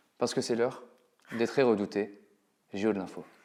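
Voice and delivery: grave, low, hushed, put-on solemn tone. A show host introduces the dreaded news quiz segment in a mock-solemn grave tone. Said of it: "je prends un ton solennel, je prends un ton grave".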